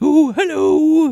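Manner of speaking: very high, loud, squeaked-out voice. Trying a Winnie the Pooh voice but doing Pennywise instead: Pennywise voice. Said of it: "that was Pennywise".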